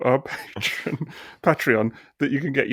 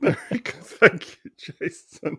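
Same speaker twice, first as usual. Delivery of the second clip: giggly, laughing through words, pitched up; 5 semitones higher than usual. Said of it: "I'm sorry for laughing through that".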